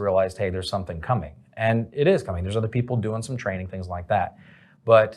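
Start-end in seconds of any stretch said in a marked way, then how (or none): none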